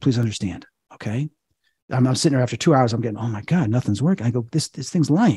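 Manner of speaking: ordinary talk, nothing marked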